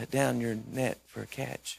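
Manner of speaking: soft, gentle, peaceful and humble voice. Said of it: "he's just gentle and peaceful and humble".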